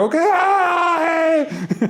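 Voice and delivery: very high, cracking, crowing cheer. Speaker retelling a lead actor's cheer in a play, imitating a cracking shout. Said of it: "his voice cracks, ... he sounds like a super rooster".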